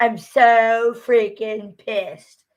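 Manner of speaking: put-on loud, very slow valley girl drawl, long "so". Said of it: "She goes".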